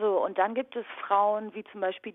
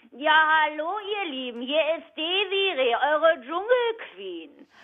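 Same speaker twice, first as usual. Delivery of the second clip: shrill, high-pitched and loud; 8 semitones higher, 5 dB louder than usual. Comparing voice colours, doing a Dschungelqueen greeting in a shrill Desiree Nick voice. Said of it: "die dann sehr viel schriller ist".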